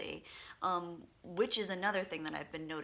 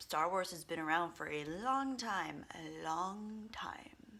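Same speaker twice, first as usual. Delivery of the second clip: put-on old British actor voice. Opening a point about Star Wars: Alec Guinness impression. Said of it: "That was my Alec Guinness impression".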